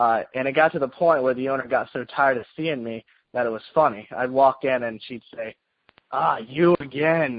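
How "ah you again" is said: mock dry, sarcasm-laced, mocking tone. Recalling a shop owner greeting a frequent visitor, imitating her sarcastic greeting. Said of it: "in a sarcastic voice".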